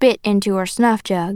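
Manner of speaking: plain reading voice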